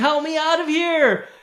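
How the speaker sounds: very high, drawn-out scream at top of lungs. A dwarf gripped by a tentacle spots the party: screaming at top of lungs. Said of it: "screaming at his, you know, top of his lungs".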